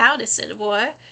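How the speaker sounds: put-on American Southern US accent. Speaker tests whether they can still do one, southern accent. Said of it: "I wonder if I can do a southern accent".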